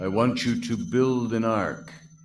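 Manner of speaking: grand, echoing voice as if from above. Showing off a streaming echo effect, God voice with echo. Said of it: "I have my God voice".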